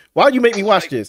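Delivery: put-on pissed-off voice. Retelling how a friend reacted to a show, imitating someone pissed off. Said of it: "He was pissed I made him watch it".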